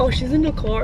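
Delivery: ordinary talk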